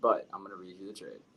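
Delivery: disinterested, careless, indifferent delivery. Starting to read out a trade to the others, sounding like you don't care. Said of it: "Sounds like you don't care".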